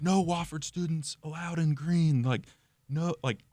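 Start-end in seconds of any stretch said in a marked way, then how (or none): 0.0-2.2 loud, high-pitched screaming voice. Retelling how campus security stopped him: imitating security screaming. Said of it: "screaming at me".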